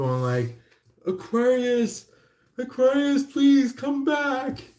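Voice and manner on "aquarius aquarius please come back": mock very high, drawn-out, desperate pleading shout. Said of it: "shouting to the top of their lungs".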